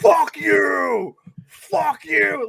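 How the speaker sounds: put-on very slow, loud, rough, drawn-out drunken yelling. Retelling a ballgame where a fan harassed a Pirates fan: imitating a drunk fan yelling. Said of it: "huge fucking drunk dickhead who was just like".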